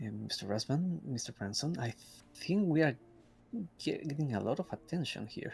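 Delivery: low voice. A character speaks to his two companions while others watch, in a low voice. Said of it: "kind of in a lower voice. I mean, in a low tone".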